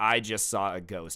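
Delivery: ordinary talk, nothing marked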